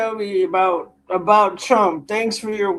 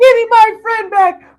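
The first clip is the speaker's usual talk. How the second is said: very high, very loud full-lung shriek; 13 semitones higher, 9 dB louder than usual. Speaker describes what he'll do, acting out a full-lung scream. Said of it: "I'm gonna scream at the top of my lungs".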